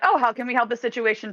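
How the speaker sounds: polite, helpful customer service voice. Showing how she switched into customer service mode to help a man, customer service voice. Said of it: "customer service mode of like".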